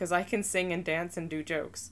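ordinary talk, nothing marked

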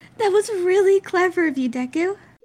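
very high, loud, projected call. Narrator reading one character's remark to another, calling out. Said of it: "Uraka calls".

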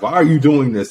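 ordinary talk

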